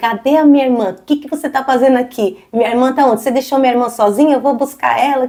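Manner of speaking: acted-out angry, furious scolding tone. Retelling how a sister confronted him at a party: imitating an angry sister. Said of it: "toda brava".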